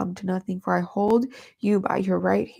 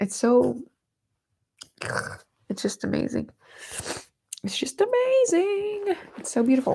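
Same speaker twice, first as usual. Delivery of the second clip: very high, tearful speech, crying through words; 9 semitones higher than usual. Talking about Jesus's grace and beauty, the speaker starts crying while talking. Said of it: "Why am I crying?".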